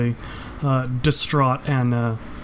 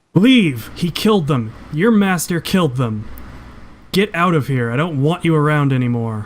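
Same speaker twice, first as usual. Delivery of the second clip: angry, loud, furious shouted yell; 3 semitones higher, 5 dB louder than usual. Voicing an NPC who throws a wrench, yelling in anger. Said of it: "she yells at you".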